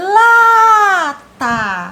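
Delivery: la in lata stressed, loud and drawn out. Teaching stressed syllables in a Portuguese lesson, stressed, drawn-out first syllable la. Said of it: "Qual a sílaba a tia falou com mais intensidade, que ela demorou mais? No lá".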